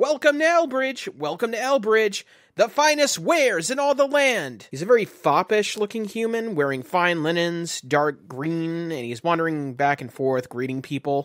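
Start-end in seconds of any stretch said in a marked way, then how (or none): 0.0-4.7 very high, shrill, yelling cry. Describing a market, the narrator voices a wandering greeter, yelling greeter.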